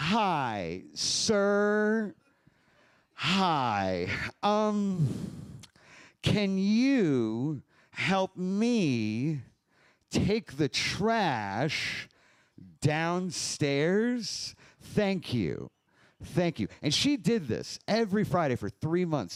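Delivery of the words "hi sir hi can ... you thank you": very slow, condescending talking-down voice. Retelling how a woman spoke to the speaker: imitating condescending slow talk. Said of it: "she would talk to me all condescending, right, and, like, slow".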